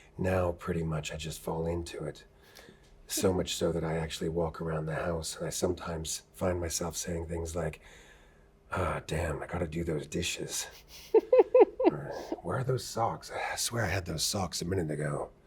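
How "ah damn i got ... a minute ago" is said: animated character voice, pitch swooping and swinging wide. Explaining how they slip into the voice around the house: Geralt voice. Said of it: "Just slipped right into".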